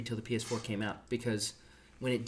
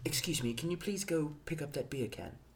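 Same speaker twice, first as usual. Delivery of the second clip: put-on British accent, much quieter; 4 semitones higher, 5 dB quieter than usual. Acting out how a British person would ask, in a British accent. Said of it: "as a British person".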